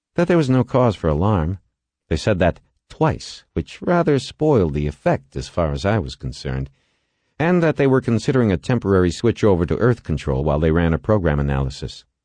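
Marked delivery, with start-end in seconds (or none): none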